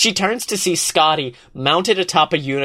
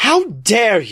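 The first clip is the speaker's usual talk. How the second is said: outraged, angry cry; 4 semitones higher than usual. Reading a story aloud, a captor answers an insult: crying out in anger. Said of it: "Eris cries".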